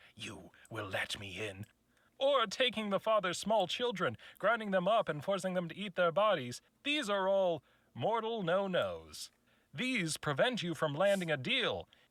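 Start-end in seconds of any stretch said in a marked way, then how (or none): 0.2-1.7 deep half-whisper, very low and soft. Listing forbidden ways to approach a mortal: low half-whisper. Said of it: "saying in a low whisper".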